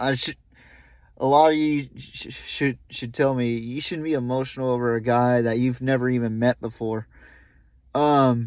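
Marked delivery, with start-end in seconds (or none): none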